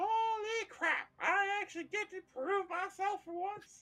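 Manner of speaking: put-on very high, loud, squeaky old turtle voice. Playing an old wizened turtle who walks out of the back; high squeaky turtle voice. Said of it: "it's still high and squeaky".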